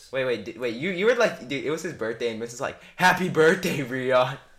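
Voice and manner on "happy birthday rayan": put-on sarcastic tone, slower. Retelling how Miss wished Rayan happy birthday in class, mimicking a sarcastic birthday wish. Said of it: "Do you know how sarcastic that was".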